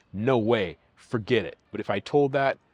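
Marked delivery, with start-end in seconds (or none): none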